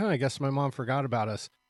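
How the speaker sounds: normal talking voice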